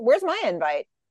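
ordinary talk, nothing marked

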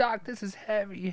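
put-on unsure high teen voice. Joining in the movie imitation: Michael J. Fox unsure voice. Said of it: "the voice thing where he's just, like, unsure".

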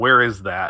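mumbled, unthinking aside half to oneself. Reading a character's first line since it all started: muttered under his breath. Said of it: "very much like almost under his breath".

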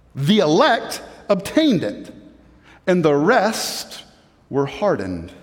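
slow reading. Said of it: "but say it slower because that was a lot to take in".

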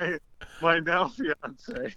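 high voice, words breaking up with laughter. A guest begins a story for the hosts, laughing while talking. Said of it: "I can't even do it without laughing".

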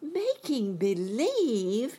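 high, startled, surprised cry. Reading a story aloud, voicing a character's reply to the little man, crying out. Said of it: "cried Dorothy".

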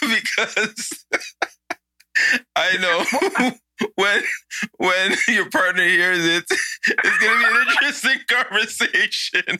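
laughing hard while talking. Answering why they are laughing so hard: laughing hard while talking. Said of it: "You're laughing a bit too hard there".

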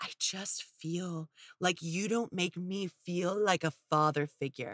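gentle, soft, low, hushed, soft-spoken voice. Retelling an argument, the speaker quotes what he said, in a soft voice. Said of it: "And in a soft voice".

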